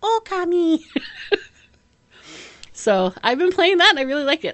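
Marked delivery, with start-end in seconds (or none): 0.0-0.8 title-screen announcer call. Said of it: "you press start and it goes".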